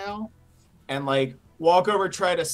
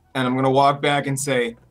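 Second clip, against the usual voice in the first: plain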